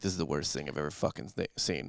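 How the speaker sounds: very quiet whisper. Retelling what Dan whispered during a showcase: imitating Dan's whisper. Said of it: "Dan turned to whisper me".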